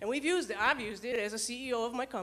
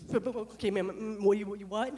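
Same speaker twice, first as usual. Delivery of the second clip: slow, halting, stammering stutter, lost for words; 3 semitones lower, 4 dB louder than usual. Retelling their first call with no training, answering a caller, re-enacting stuttering. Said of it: "So I'm stuttering".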